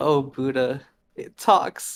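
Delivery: loud, heavy sobbing while speaking. Voicing a character who speaks through heavy sobs: sobbing. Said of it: "Through, through sobs".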